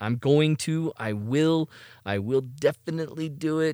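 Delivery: slow, grudging, hesitant, reluctant delivery. Promising to buy an expensive camera while paying other bills: reluctant tone. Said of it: "I say this in that kind of tone of voice".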